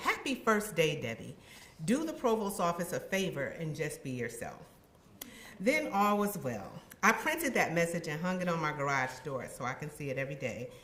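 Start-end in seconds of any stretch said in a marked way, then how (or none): none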